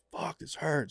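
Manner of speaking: mock small yelled cry of pain. Retelling what an injured colleague shouted in the ambulance: imitating someone yelling. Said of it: "just yelling".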